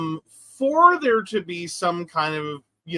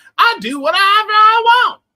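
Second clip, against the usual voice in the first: very high, very loud, shrill, blustering cartoon voice; 8 dB louder than usual. Quoting a line from South Park as an example: Cartman impression. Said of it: "When Cartman's like".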